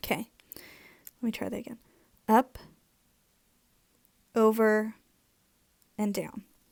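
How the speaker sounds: slightly scratchy voice. Guiding a drawing step by step, retrying a stroke, scratchy voice. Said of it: "my voice is a little".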